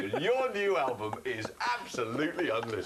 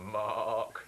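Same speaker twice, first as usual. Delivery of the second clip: put-on sheep-like voice, lower pitch; 5 semitones lower than usual. Recalling an interview, you show how your name was said back to you in a sheep-like voice. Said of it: "saying my name in a sheep-like manner".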